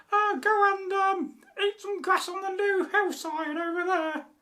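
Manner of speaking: tiny, very high, squeaky billy goat voice. Telling the story, the narrator voices the little baby billy goat: squeaky little goat voice. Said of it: "he had a squeaky voice".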